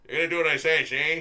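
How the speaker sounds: put-on loud, heavy old-time gangster voice. Imitating how the cartoon bad guys talked: Dick Tracy gangster voice. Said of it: "his bad guys had the Dick Tracy gangster voices".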